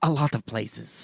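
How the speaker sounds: put-on Scottish accent gradually sliding toward a French accent. Quoting the character's answer to the cop: Christopher Lambert impression. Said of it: "that was a really good impression".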